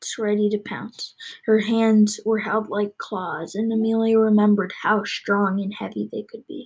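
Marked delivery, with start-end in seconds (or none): none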